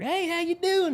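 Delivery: put-on country twang, pitched way up, very high. Retelling greeting people on parking lot duty, in a put-on country accent. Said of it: "Turn on the country accent".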